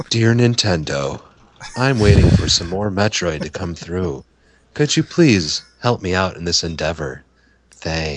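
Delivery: eerie, spooky synthetic computer voice. Joking about writing letters to nintendo, in a creepy computer voice. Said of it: "You sound like a creepy computer".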